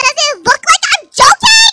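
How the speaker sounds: loud shouting. Arguing with friends over a place being taken: yelling. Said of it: "she's yelling".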